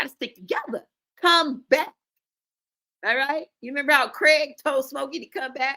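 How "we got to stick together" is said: made-up, put-on smoky character voice. Repeating a previous line, now in a Smokey voice. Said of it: "In my smoky voice".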